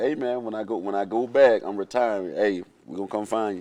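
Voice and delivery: ordinary talk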